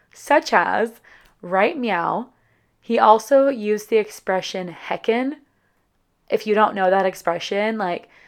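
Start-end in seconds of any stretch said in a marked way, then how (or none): none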